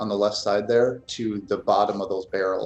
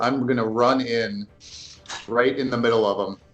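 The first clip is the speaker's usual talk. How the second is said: usual speaking voice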